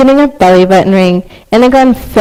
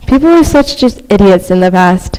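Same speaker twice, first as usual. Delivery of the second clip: ordinary talk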